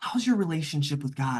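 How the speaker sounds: hushed, confidential stage half-whisper. Retelling a woman's question in a busy checkout line: imitating someone half-whispering. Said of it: "whispering to me".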